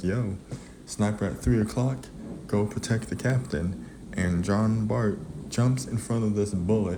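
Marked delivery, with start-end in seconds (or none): none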